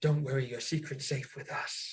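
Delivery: quiet, soft, hushed whisper. Leaning out the window in character to reassure a friend: whispering.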